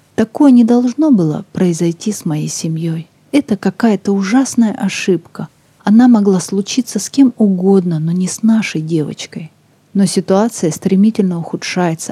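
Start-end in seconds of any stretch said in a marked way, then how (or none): none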